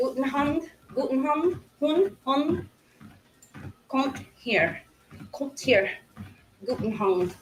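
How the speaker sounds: guttural, throat-swallowed German accent, slow. Demonstrate what your german teacher would say to do, speaking as if swallowing your throat. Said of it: "act like you're swallowing your throat".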